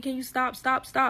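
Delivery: mock screaming. Retelling a friend begging the husband, imitating someone screaming to stop. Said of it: "he's screaming".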